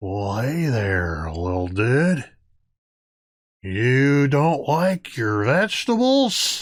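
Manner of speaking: giant talking tree character voice. Voicing a crouching tree that greets a player: talking tree voice. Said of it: "crouches down towards you and says".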